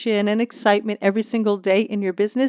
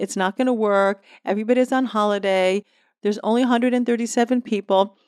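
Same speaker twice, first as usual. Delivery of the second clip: usual speaking voice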